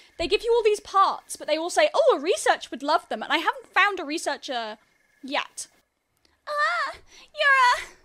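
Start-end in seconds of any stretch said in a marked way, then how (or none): 6.5-7.8 very high anime-style character voice. Playing a game and greeting an NPC, slipping into an anime character voice. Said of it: "I'm doing the anime voice again".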